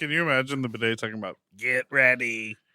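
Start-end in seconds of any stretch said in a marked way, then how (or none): 1.6-2.5 attempted robot voice. Imagining a talking bidet: attempted robot voice. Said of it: "us trying to do a robot voice".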